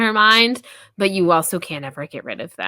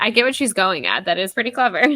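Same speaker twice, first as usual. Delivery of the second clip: plain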